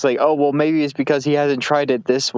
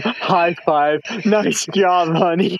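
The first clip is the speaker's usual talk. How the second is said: high, fake, super-enthusiastic gushing tone; 5 semitones higher than usual. Acting out a high five for a partner: mock super enthusiasm. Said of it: "super enthusiasm".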